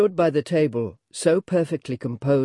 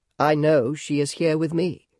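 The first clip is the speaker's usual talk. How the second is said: plain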